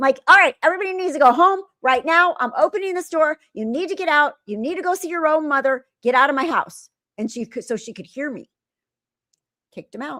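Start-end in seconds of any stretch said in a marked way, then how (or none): 0.3-6.9 put-on raised, loud, high-pitched yell. Retelling yelling at children only the mother could see: imitating own yelling. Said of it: "I yell at them".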